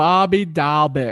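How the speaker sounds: terrible, unconvincing put-on Boston accent. Speaker talking baseball says a Boston player's name in a bad Boston accent. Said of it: "That was my best Boston accent".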